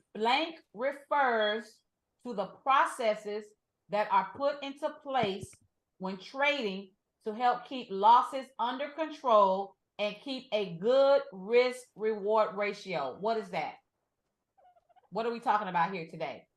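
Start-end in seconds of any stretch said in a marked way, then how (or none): 0.2-13.2 every word drawn out, very slow, deliberate. Reading a fill-in-the-blank question aloud to the person answering, very slow. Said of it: "I'm going to say it very slow".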